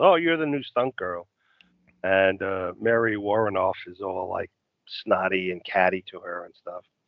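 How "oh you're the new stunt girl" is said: ordinary talk, nothing marked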